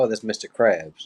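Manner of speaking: ordinary delivery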